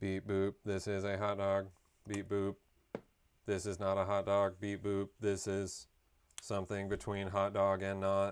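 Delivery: classic flat, monotone, mechanical robot voice. Joking about ai saying beep boop, speaking in the classic robot voice. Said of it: "Just the classic robot voice".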